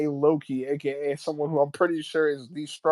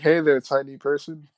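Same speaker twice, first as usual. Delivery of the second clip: ordinary talk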